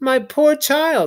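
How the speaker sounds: switched to a very high, changed voice. Narrator reading her words to Edmund after she changes her mind, in a different voice. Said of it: "said she in quite a different voice".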